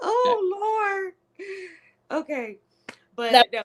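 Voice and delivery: laughing, very high, very slow. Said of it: "have you cracking up on this".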